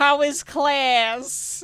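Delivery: doting mom voice, very high, class drawn out. Imitating an old mother on the phone with her son: imitating a mom accent. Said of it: "she's doing all of that".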